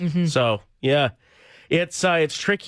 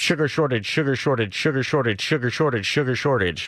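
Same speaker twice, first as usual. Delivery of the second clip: rattled off rapidly five times running; 2 semitones lower than usual. Answering a challenge to repeat a tongue twister: saying it five times fast. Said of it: "tough to say it five times fast".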